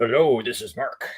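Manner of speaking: grand, big, epic-sounding delivery. Imitating Mark right after calling his voice epic: imitating Mark's epic voice. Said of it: "he's got the epic voice to help override it".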